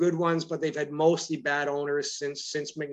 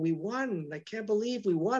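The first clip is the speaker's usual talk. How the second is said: put-on quiet, weepy, tearful, disbelieving voice; 6 semitones higher, 4 dB quieter than usual. Retelling an older fan a few rows ahead after the win, imitating soft crying. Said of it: "he was just kind of softly crying and going".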